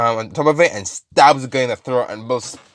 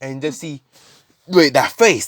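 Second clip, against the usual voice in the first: plain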